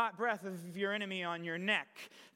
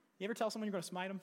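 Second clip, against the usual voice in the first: normal talking voice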